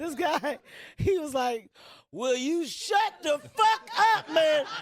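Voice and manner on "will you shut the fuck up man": put-on loud, furious, angry heckler yelling. Retelling a heckler's outburst during a comedy set: imitating an angry heckler. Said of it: "I've never seen a person get so angry".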